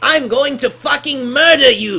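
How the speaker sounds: very loud, high, slow, swooping character voice. Talking about Dragon Ball Z Kai voice actors; doing a Frieza impression. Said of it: "That's my half decent impression".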